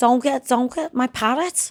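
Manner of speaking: put-on Scouse accent. Showing how people in Liverpool talk: Scouse accent. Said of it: "I can do Scouse".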